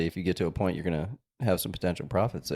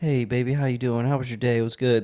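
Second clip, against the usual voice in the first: sweet, tender, lovey-dovey voice; 5 semitones higher, 4 dB louder than usual. Retelling a video contrasting phone calls: imitating talking sweetly to a wife. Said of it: "how you talk to your wife versus how you".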